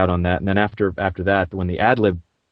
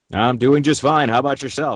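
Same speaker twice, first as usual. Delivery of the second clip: booth announcer-style voice, pitched up; 6 semitones higher than usual. A voice actor guest answers the interview host in an announcer voice. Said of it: "I'm using my announcer voice".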